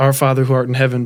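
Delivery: normal talking voice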